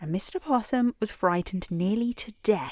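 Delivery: ordinary delivery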